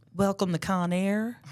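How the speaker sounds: put-on Southern accent. Repeating the show opener after being asked: southern accent. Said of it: "Now do it with a Southern accent".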